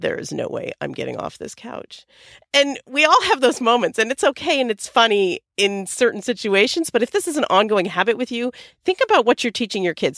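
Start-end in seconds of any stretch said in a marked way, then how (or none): 0.0-2.1 very quiet, hushed whisper under the breath. Retelling how her husband whispered to her under his breath: imitating a whisper. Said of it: "whispered to me under his breath".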